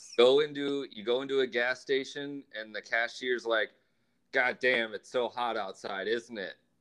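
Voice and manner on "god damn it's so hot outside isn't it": mock gloomy, negative griping tone. Retelling what a gas station cashier said about the heat: imitating a negative complaint. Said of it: "why do you have to say it with such negativity".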